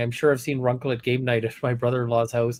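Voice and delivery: ordinary delivery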